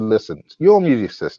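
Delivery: ordinary delivery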